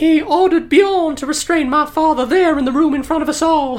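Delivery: put-on old southern belle voice, southern accent. Telling a dramatic story from her past, old southern belle voice. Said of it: "She's like an old southern belle".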